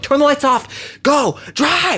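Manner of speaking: mock very high, drawn-out, freaked-out screaming. Retelling passengers in a cab telling the driver to go: imitating passengers screaming. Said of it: "they're screaming at her".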